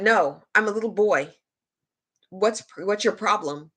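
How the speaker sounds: mock combative, hostile tone. Retelling own reply to a player asking if she's a girl: imitating own hostile reply. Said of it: "I had to be very hostile".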